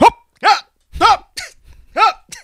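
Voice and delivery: put-on very high voice in full panic. Retelling his dad walking in after cutting his fingertips, imitating dad panicking. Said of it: "He's like panicking".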